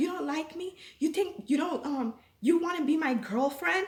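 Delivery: imitated pushy man calling out. Retelling how a stranger in a shop spoke to her: imitating a man yelling.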